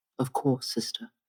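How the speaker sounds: quiet, hushed whisper under the breath. Bren answers the voice calling to her as sister, in a hushed tone. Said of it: "in kind of a hushed tone, Bren says quietly".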